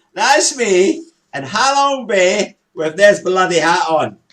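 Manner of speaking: loud, slow, laughing, boastful shouting. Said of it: "Am I shouting?".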